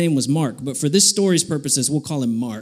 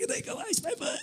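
near-whispered, hushed, pleading tone, holding back tears; 15 dB quieter than usual. Retelling asking the art teacher to ice a foot: retelling holding back tears. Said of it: "I'm trying not to cry".

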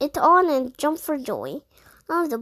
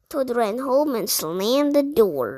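ordinary delivery

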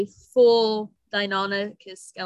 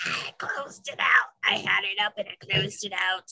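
breathy, whispered goblin-type creature voice; 4 dB quieter than usual. Talking about a dragon he'll save for an episode, in a goblin voice. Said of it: "ignore my goblin voice".

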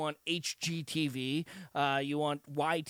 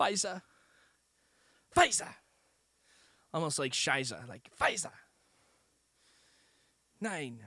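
terrible, bad put-on German accent. Speaker riffs on how vaccine names sound, saying them in a terrible German accent. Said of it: "That was a terrible German".

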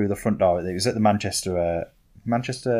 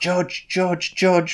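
mock, high-pitched screaming; 10 semitones higher than usual. Retelling a man's reaction when the speaker stood up: imitating someone screaming. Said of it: "he just started screaming".

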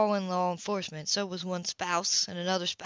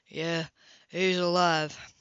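flat voice with no emotion. [name] announces as Gage's brother Grayson comes through the door; flat, emotionless voice. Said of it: "no emotion in his voice".

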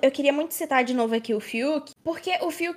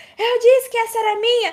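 high, victorious, triumphant shout; 7 semitones higher, 8 dB louder than usual. Recounting a funny scene where he unlocked the padlock: retelling a shout. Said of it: "ele começou a gritar".

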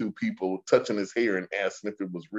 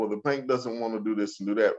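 normal talking voice

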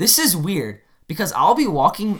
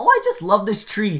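put-on cutesy, sweet little old lady voice; 4 semitones higher than usual. Retelling what an old lady on the street said: imitating a cute old lady. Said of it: "the cutest old lady you've ever seen".

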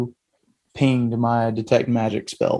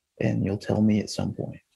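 quiet, hushed, under-the-breath voice; 3 semitones lower, 6 dB quieter than usual. Leaning back to quietly confide in a companion named Slate: speaking real quietly. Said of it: "kinda real quietly just be like".

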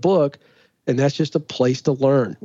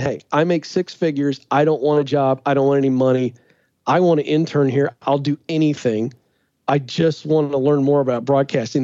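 usual speaking voice

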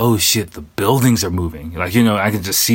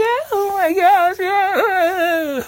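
very high, slow, fussy freaking-out lady voice. Retelling how older ladies on a train reacted: imitating ladies freaking out. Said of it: "they just start freaking out".

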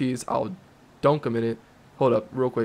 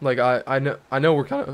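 voice cracking, slower pace. Agreeing with the other speaker during a burger debate, voice cracking. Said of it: "my voice just cracked so bad".

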